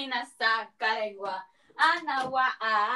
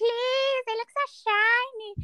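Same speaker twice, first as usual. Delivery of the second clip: eerie, very high, creepy squeak; 10 semitones higher than usual. Retelling their own past words to the other speaker: put-on creepy voice. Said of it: "You sound".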